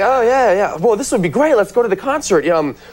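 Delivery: eager, excited gushing.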